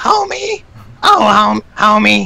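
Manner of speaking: very slow, rough, creaky drawl, stretched homie. Answering a request for a Marge Simpson impression: Marge Simpson voice. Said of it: "My Marge Simpson".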